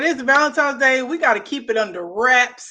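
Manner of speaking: ordinary talk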